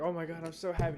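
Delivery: mock gushing, overjoyed tone. Mocking workers gushing as the boss walks through: imitating gushing employees. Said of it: "everyone's like".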